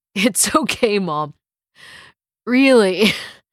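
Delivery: speaking between giggles, laughing through the words. David reassures his worried mother on the phone, can't stop laughing. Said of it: "if you can't stop laughing".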